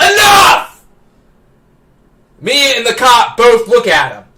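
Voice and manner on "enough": put-on, very high, loud, sudden angry outburst. Retelling a store manager suddenly silencing an argument: imitating a manager erupting. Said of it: "the store manager erupts".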